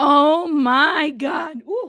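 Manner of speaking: voice breaking, cracking, giving out. Starting the show when the voice gives out, voice cracking out. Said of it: "my voice went out".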